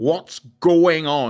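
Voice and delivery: put-on slow, drawn-out, suspicious old man voice. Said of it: "he'd be like".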